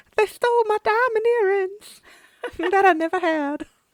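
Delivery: genteel Southern woman voice.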